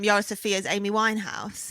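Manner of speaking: ordinary talk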